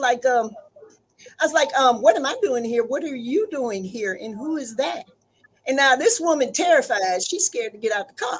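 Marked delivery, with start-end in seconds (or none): 2.0-5.0 quiet, menacing, eerily and dangerously calm voice. Retelling own words on catching a cheating partner: retelling a dangerously calm voice. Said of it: "I was real calm".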